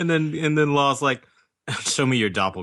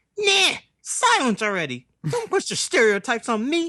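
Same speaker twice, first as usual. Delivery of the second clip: very high-pitched, fed-up, dismissive tone; 12 semitones higher than usual. Voicing a fed-up character in a retold scene: Kevin Hart and Chris Tucker mix voice. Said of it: "a mix between, like, uh, Kevin Hart and, uh, Chris Tucker".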